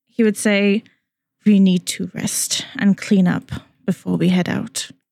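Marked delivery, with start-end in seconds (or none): 1.4-4.9 exasperated, fed-up motherly tone. Voicing a character telling an injured companion to rest: like a fed-up mother. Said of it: "kind of like a mother who's, uh, sick of people's shit".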